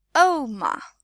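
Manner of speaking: Oma, stress on first syllable, pitch falling. Teaching the word oma, oma stressed first, falling at end. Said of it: "the emphasis on the first syllable ... You can hear my voice dropping at the end".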